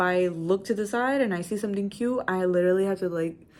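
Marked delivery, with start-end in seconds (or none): none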